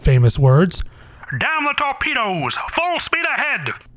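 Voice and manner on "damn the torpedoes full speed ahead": put-on very high-pitched, old-fashioned, old-timey voice. Quoting an admiral's supposed famous words, old-timey Farragut voice. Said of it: "I don't know why I gave him that voice. I was trying to sound old-timey".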